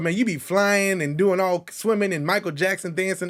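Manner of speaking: usual speaking voice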